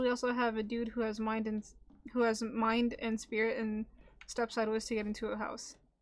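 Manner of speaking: ordinary delivery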